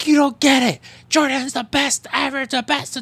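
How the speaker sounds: put-on high scream. Retelling how a man screamed at security as they removed him; retelling a scream at security. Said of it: "he's like screaming at security".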